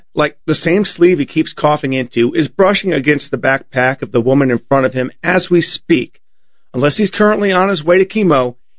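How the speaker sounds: plain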